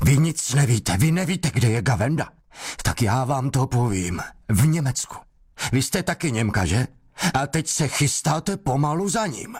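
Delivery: sudden, explosive, high-pitched outburst. Reading the investigator's words as he bursts into an interrogation, explosive outburst. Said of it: "Výbuch, s jakým vstoupil do vyšetřování".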